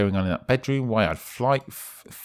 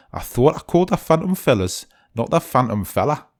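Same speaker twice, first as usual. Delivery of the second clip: attempted Newcastle Geordie accent; 3 semitones higher, 4 dB louder than usual. Voicing a client character, trying a Geordie accent. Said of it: "I can't do a Geordie accent".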